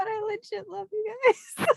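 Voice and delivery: tearful, choked-up crying, barely holding together, very high. Thanking the group after being called a noble friend, choked up, crying. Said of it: "I'm gonna mute because I can't hold it together".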